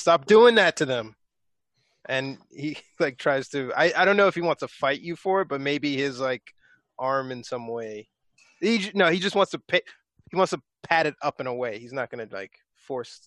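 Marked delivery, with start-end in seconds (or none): 0.0-1.1 raised yelling voice. Voicing a character in a shared story, the speaker is yelling.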